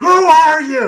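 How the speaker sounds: shrill, very high, very loud screaming. Retelling how a role player screamed at armed trainees entering the room, retelling a scream. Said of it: "Just screaming at them".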